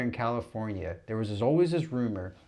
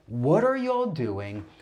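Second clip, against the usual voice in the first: male scream, higher pitch; 4 semitones higher, 4 dB louder than usual. Retelling a video of a man at an airport: imitating a man screaming.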